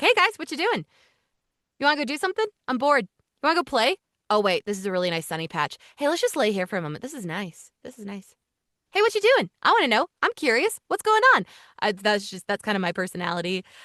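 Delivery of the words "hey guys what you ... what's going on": excitable, eager happy Labrador dog voice. Asked which documentary animal they would voice, speaker talks as a Labrador dog. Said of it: "I have the personality of a Labrador where it's like".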